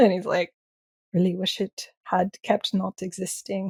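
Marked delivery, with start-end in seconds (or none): 1.1-3.7 put-on soft, quiet voice in an Irish accent. Retelling what Killian Plunkett said about an episode: Killian Plunkett impression, Irish accent. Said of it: "I can't do an Irish accent like you can".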